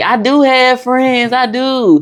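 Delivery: mock tearful crying, high and drawn-out. Recalling answering mother's remark while growing up, imitating own past crying. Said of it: "And I used to be crying like".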